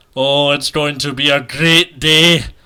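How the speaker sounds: terrible put-on Scottish accent, very loud. Podcast host tries a Scottish accent for a joke sponsor, bad Scottish accent. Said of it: "Scottish accent".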